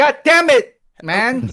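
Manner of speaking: very high, long, drawn-out shout. Answering a post-game interview greeting, shouting. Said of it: "don't shout at me".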